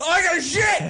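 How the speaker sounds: high, playful, pretend yell. Acting out what he would yell while getting a tattoo, mock yelling. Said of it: "I would yell".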